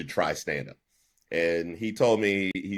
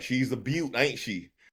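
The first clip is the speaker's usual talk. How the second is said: high, put-on, folksy country car-salesman accent; 6 semitones higher than usual. Tapping a car while selling it, pitching it in a country accent. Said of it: "have like a like a country accent the whole time".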